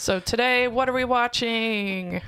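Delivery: like a sports announcer. Opening a movie-watching episode with a co-host, in a sports announcer voice. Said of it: "I said that like a sports announcer".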